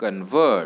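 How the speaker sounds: convert with stress on second syllable -vert. Explaining how stress shifts between noun and verb: convert, stress on second syllable. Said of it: "the stress is on the second syllable".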